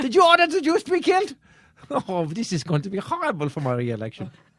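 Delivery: put-on German accent. Doing a comedy bit as Hitler answering his haters: Hitler voice with German accent. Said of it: "I like the German voice too".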